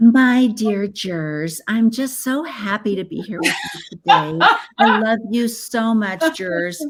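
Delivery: put-on childish, babyish little-kid baby voice. Mocking a lawyer addressing jurors in court, in baby voice. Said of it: "Do you use that baby voice in court?".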